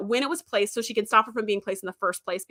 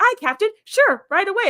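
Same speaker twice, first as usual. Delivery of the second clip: happy, bubbly, eager, high and loud. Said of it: "a happy, bubbly".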